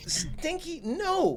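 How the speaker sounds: very high, soft feminine voice. Narrating a scene as someone tries to come in the front door: feminine voice. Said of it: "a feminine voice go".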